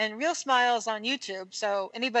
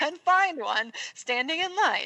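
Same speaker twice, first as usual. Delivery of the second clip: put-on, high, heavy sarcasm laid on thick; 5 semitones higher than usual. Speaker retelling what they told people who act for a living: retelling a sarcastic remark. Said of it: "I was being super sarcastic".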